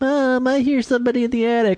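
put-on very high-pitched little kid's voice. Pitching an imagined eighties rom-com scene: young Macaulay Culkin as a kid. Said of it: "maybe a young Macaulay Culkin is one of the kids".

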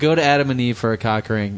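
ordinary delivery

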